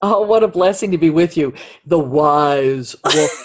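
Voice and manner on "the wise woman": deep radio announcer voice, "wise" drawn out. Podcast co-host, asked for a radio voice, introduces the guest: low radio announcer voice. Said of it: "a low radio type voice".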